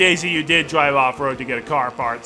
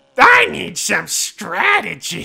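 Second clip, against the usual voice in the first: bad put-on duck voice, higher and slower; 3 semitones higher than usual. Narrating a racing game with Goofy and Daisy, speaking as Donald in a Donald Duck voice. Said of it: "I know it's not a good Donald voice".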